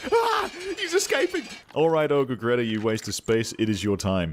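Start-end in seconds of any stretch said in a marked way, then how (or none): 0.1-1.4 screaming, very high alarm. Playing a game, retelling what the guy outside the cage yelled, imitating a guy screaming. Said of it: "Guy's just screaming like".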